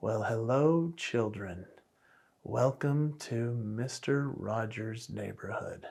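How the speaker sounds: unhurried, slow, soft, deliberate, drawn-out delivery. Showing how a slow speaker sounded: slow Mister Rogers impression. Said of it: "he spoke like this".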